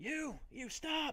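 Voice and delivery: called out loudly. Retelling how security guards ran up and called to him, calling out 'stop'. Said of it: "They're calling at you to stop now".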